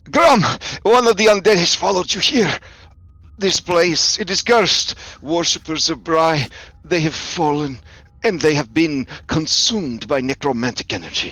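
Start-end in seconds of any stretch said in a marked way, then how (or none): 0.1-7.8 shrill, screeching, shrieking cry. Voicing a character in a role-play who shrieks again as he addresses Grom, shrieking voice. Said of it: "he shrieks again and he says".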